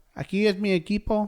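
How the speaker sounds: high, soft little voice. Speakers take turns speaking for Canelo: high-pitched Canelo impression. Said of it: "I'm speaking for Canelo".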